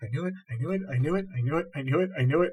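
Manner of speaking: hushed, terrified muttering, repeated over and over. Holding a crucifix out in both hands and backing up: terrified muttering. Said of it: "start to mutter when my scream dies off".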